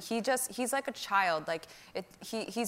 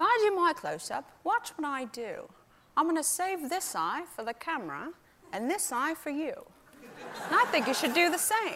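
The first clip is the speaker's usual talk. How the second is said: bad, rough put-on star voice, pitched high; 6 semitones higher than usual. Retelling what a co-star said on set: bad Michael Caine impression. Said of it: "this is a very bad impression".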